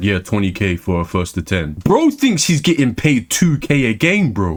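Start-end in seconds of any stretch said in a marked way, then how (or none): 0.0-1.7 low, deep, dead-level flat monotone. Mocking players who ask for money matches, imitating their monotone voice. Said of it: "in their monotone voice".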